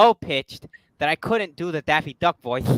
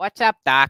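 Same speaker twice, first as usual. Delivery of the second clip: loud cartoon rabbit voice; 3 semitones higher, 5 dB louder than usual. Answering another speaker's impression, trying a Bugs Bunny voice. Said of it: "a very good Bugs Bunny voice".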